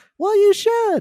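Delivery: very high character voice. Acting out Elmo answering Oscar about the shot: Elmo voice. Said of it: "And Elmo's like".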